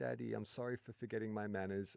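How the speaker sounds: put-on soft, small, sweet, cute little-kid voice. Retelling a knock on the shower door, the speaker quotes Iona; imitating Iona's cute voice. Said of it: "like cute voice".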